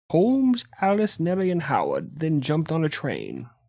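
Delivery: put-on old-timey historical voice, soft and swooping. Narrating a story, in an old-timey historical voice. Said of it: "your historical voice that you've developed".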